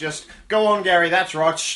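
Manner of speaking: put-on Australian man's voice. Imitating an australian man calling his goat: australian accent. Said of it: "Australian number two".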